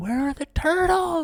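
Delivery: shrill, very high scream. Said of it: "they start screaming".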